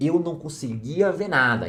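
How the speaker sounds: ordinary talk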